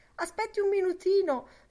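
very high, loud, begging, pleading voice. Lenian, drinking in a hurry, asks Boylan to wait as he leaves, pleading. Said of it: "supplicò Lenian".

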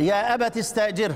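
ordinary talk

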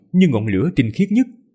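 plain reading voice

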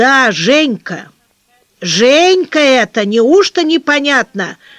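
slow, loud, drawn-out shout. Narrator reads Anisiya Matveyevna's line after Antonina Alekseyevna speaks, shouting. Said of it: "закричала Анисия Матвеевна".

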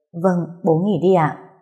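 ordinary delivery

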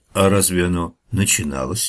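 ordinary delivery, nothing marked

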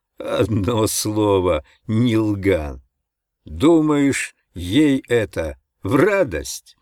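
mocking, derisive tone. Speaking up from behind the narrator, the other man answers him, mocking. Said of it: "насмешливо сказал сзади Вургр".

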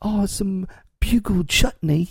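fake, affected British accent. Joking that bugle chutney must be said in a put-on british accent. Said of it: "you have to say that with a British voice".

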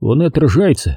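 plain reading voice

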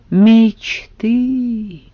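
sighed, with a sigh. A servant answers another man's plans, with a sigh. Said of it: "вздохнул слуга".

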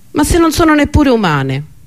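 very high, swooping exclaimed cry. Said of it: "Beryl esclamò".

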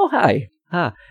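high-pitched, innocent voice. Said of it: "he's like".

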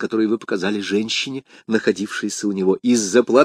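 ordinary delivery

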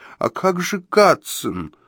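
high, quavering, trembling voice. Narrator voices Perredzhi asking Joe a question, in a trembling voice. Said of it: "дрожащим голосом спросила Переджи".

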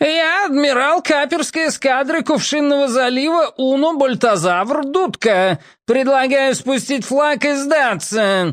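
unexpectedly thin, high shout. Narrator reads the privateer admiral hailing Captain Paul's ship, an unexpectedly thin shout. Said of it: "закричал неожиданно тонким голосом".

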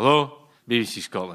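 put-on drowsy, sleepy, just-woken voice. Retelling phoning BBC Scotland when security answered, imitating John's sleepy voice. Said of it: "this sleepy voice answered".

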